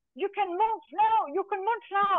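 put-on hollered, high, shouting Scottish accent. Cyclist retelling her husband shouting to her at the mount line, retelling a Scottish-accent shout. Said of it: "in his Scottish accent is shouting".

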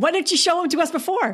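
quick, high-pitched mock exasperation.

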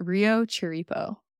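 anglicized American pronunciation. Saying a name the group will look up: gringo accent on the name. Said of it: "I'm going to say it with the gringo accent".

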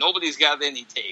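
normal talking voice

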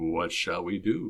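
hushed, very soft, low, put-on seductive voice. Husband retelling what he asked his wife, in his best sexy voice. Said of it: "in my best sexy voice asked".

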